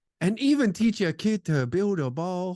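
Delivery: put-on, joking Chinese accent. Joking about teaching kids to build a ball: put-on Chinese accent. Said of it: "my Chinese accent is elite".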